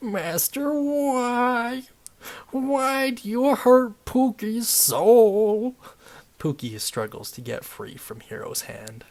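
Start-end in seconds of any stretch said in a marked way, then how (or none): 0.0-5.7 very high, very slow, loud sobbing. Narrating the story, the speaker voices Pookie the imp crying to his master. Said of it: "you can see a bright red imp sitting on the ground. This imp is surprisingly short and out of shape, its gut comprising the vast majority of its body. / you can see a bright red imp sitting on the gro".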